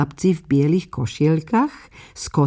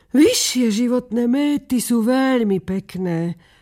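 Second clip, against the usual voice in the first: said sighing, in a higher pitch; 5 semitones higher than usual. A duck answers the rocket's boasting speech, sighing. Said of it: "povzdychla si kačka".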